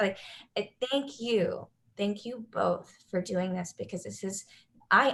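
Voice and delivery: choked up, halting, on the verge of tears. Telling about a ballerina with gumption who paved the way, choked up, emotional. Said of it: "I'm gonna cry. I don't know why I'm so emotional".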